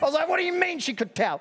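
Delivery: play-acted, very high-pitched, indignant, angry tone. Retelling how they answered their older sister, retelling an angry retort. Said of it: "And I was so angry".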